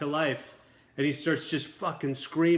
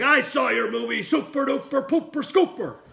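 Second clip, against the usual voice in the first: put-on voice, higher-pitched and louder; 9 semitones higher, 5 dB louder than usual. Retelling a meeting where Bert scolded him: imitating someone chewing him out. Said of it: "he starts chewing me out".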